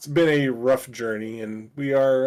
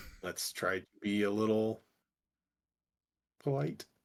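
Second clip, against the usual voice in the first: hushed whisper, lower and quieter; 3 semitones lower, 10 dB quieter than usual. Whispering in character to a companion during a tense exchange: whispering. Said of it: "whisper in Timble".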